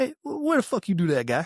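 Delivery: put-on very high, swooping, chummy one-of-the-boys tone. Retelling how a drill sergeant talked to the speaker's group, imitating drill sergeant's buddy tone. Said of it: "talking to us like one of the boys".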